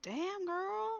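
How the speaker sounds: muttering quietly under breath. Voicing a character reacting to a story: muttered under her breath. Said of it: "under her breath".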